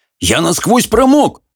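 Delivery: very high, outraged, indignant voice. A soaked man protests to a woman who keeps questioning him, indignant. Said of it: "возмутился Хоул".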